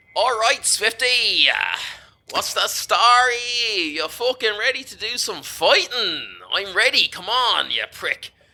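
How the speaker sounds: very high, squeaky, brash, drawn-out delivery. Voicing a little friend, Hector, greeting Swifty at the training ground: voicing Hector. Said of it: "Hector chimes up and he's like".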